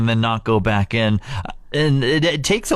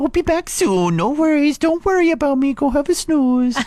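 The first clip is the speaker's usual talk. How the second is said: squeaky, very high-pitched dog voice. Reading responses from the Facebook page aloud as the dog: dog voice. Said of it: "I'm reading every single one of these over on our Facebook page in the dog voice".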